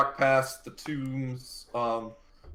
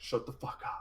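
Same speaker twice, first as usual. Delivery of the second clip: faint, very quiet whisper; 13 dB quieter than usual. Voicing a whisper in a player's head: voicing a whisper. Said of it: "you just hear a whisper in the back of your head".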